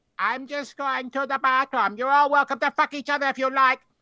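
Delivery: very high, spooky, ghoulish voice. Reading a story aloud, a voice calls from the hallway to three men in bed, ghoulish voice. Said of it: "a ghoulish voice echoed from the hallway".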